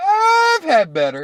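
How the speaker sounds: very high-pitched, with long drawn-out words. Retelling how a man answered a woman's question, retelling drawn-out words. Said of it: "he extended it long".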